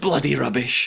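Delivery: mock furious, fed-up, fuming outburst. Retelling a contestant's angry debrief reaction: imitating Mark fuming. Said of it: "he's just absolutely fuming".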